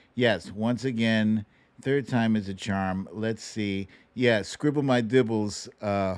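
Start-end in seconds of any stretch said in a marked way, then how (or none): none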